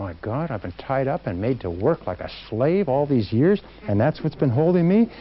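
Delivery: ordinary delivery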